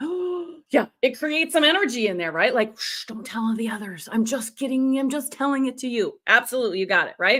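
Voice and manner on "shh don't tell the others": soft, hushed, conspiratorial, secretive tone. Explaining that quiet means secrecy, the speaker demonstrates with a quiet, secretive voice. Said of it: "quiet would be secrecy".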